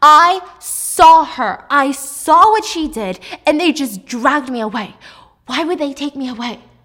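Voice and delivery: screaming at full volume, very loud. Retelling a character arguing with her partner, imitating someone screaming. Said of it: "she's still screaming at him".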